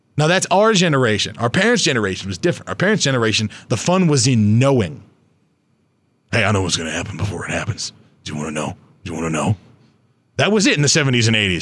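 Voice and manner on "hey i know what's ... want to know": very low street-hustler voice. Describing your parents' generation, slipping into the voice of a street parking guy. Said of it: "I don't know why I just went into this voice".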